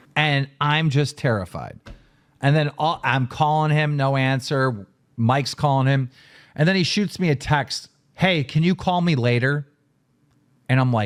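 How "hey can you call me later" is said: mock casual, offhand tone. Retelling a text received after a scare: imitating a casual tone. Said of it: "Casual, as if nothing fucking happened".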